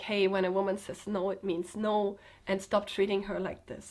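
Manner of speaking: ordinary talk, nothing marked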